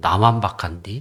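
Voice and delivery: low, soft muttering under the breath.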